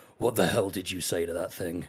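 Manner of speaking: put-on goblin voice. Voicing Grin after he throws up, asking the mage a question: Grin the goblin's voice. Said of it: "wipes his mouth and just goes".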